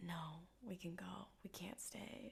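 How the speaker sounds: put-on, very soft, quiet, moody emo delivery. Retelling how Sam looks out the window and answers: emo Sam voice. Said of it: "in an emo way".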